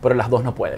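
plain

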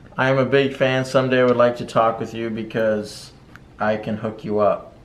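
normal talking voice

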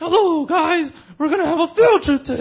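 very high, loud announcing voice. Recalling cartoon catchphrases, imitating Miss Frizzle. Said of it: "Miss Frizzle will come in, and she'll come and be like".

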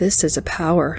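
plain

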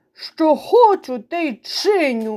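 snarled, teeth bared. A narrator reads a water beetle answering back, snarling. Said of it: "ошкірився плавунець".

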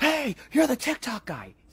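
very high, loud, drawn-out shrieking holler. Retelling how a driver rolled down his window and screamed at him, retelling a driver's scream. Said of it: "rolls down the window and just screams".

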